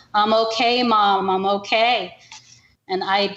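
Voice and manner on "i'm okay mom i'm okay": plain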